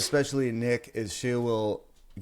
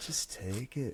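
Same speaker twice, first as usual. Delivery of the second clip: smooth, syrupy, honeyed smooth-talker's coaxing; 10 dB quieter than usual. Retelling how a coworker coaxed them to take a gummy: imitating smooth syrupy talk. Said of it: "smooth talking and syrupy".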